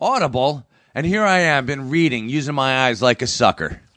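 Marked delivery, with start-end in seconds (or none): 0.0-0.7 put-on cartoon voice, pitched up. Saying how the word Audible sounds in his head: Homer Simpson voice. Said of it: "I hear Homer Simpson's voice. It's like".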